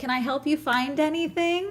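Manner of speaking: polite customer-service voice. Retelling offering help while tidying at a baby clothes store: polite customer-service voice. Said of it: "In my service voice".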